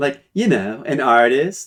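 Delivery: put-on valley girl voice. Introducing a character named Tantalia, in a Valley Girl voice. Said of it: "I love Valley Girl voices".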